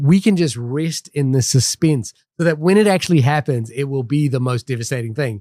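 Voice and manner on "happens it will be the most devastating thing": normal talking voice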